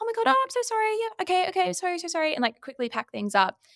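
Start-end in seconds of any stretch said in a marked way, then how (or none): 0.0-2.3 very high, squeaky, flustered, panicky apologizing tone. Speaker reenacts their own reaction when interrupted while wrapping up, retelling own high-pitched reply. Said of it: "immediately like high pitched".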